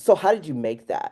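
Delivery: put-on patronizing, talking-down, doubtful tone. Retelling what others asked when shown art: imitating a condescending tone. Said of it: "In that tone, in that tone".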